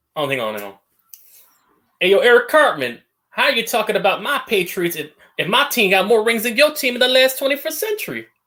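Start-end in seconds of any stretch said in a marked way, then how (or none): 2.0-8.3 very high, botched put-on Southern accent. Voicing Coulter addressing Eric Cartman, imitating Coulter, failed Southern accent. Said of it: "I can't do the Southern thing".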